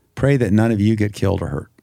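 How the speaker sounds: ordinary delivery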